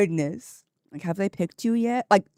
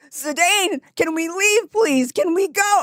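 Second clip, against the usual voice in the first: mock very high, top-of-the-lungs, pleading scream; 9 semitones higher, 3 dB louder than usual. Retelling urging Zidane to leave as others walk toward them, retelling own screaming. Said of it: "I'm screaming at the top of my lungs".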